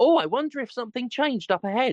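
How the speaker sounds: high, grating, annoying, nagging fairy voice. Retelling a chatty game companion's comments: imitating annoying fairy voice. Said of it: "has that annoying fucking fairy voice".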